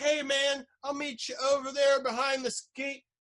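loud, high holler. Retelling calling to a buddy while coming down the hill: imitating own past yell. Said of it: "yelling at my buddy".

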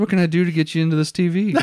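pushy salesman patter. Retelling how a store salesman greets customers: imitating a used car salesman. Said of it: "They're kinda like used car salesmen".

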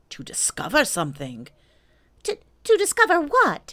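worried, anxious, fretful, very high voice. Hearing about the expedition, a friend asks back, anxious. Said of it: "said piglet anxiously".

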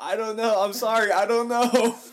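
piercing, very high, full-volume screaming. After a friend separated them in a fight, retelling screaming. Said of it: "And I'm just screaming".

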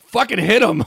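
shrill, full-volume screaming outburst. Retelling a ride moment after a guy said don't hit him: retelling a scream. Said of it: "And I screamed".

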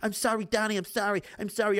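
put-on whimpering. Acting out Louie apologizing to Donnie, mock sniveling apology. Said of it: "he's coming in here sniveling like a bitch".

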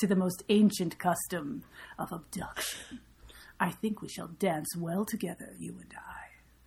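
soft, eerie, creepy, unsettling voice. Speaking a creepy line to a listener, sounding like Mother Aughra. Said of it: "you sound like Mother Agra from the Dark Crystal".

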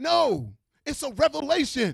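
shouting.

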